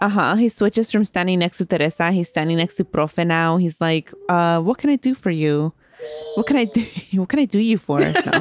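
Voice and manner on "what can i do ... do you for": suddenly formal, proper, businesslike tone. Retelling a character's reply after switching sides: imitating a formal tone. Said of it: "all formal all of a sudden".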